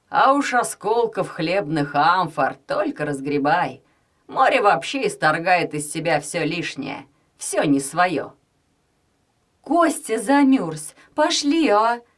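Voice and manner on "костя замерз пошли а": high, plaintive, pleading cry. Narrating a mother on a cold seaside walk with her family: plaintive shout. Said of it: "жалобно крикнула мама".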